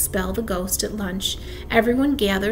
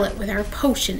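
usual speaking voice

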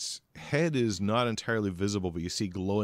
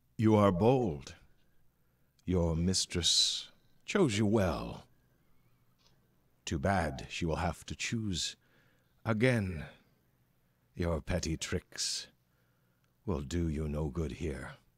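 clear voice sounding inside the mind. Narrating an encounter, voicing a creature heard as a clear voice in the mind. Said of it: "you hear a voice".

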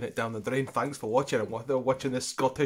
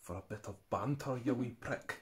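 fake put-on Scottish accent, quieter; 9 dB quieter than usual. During a beer review, asked why he's talking scottish, answering in a put-on scottish accent. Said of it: "Why are you talking Scottish?".

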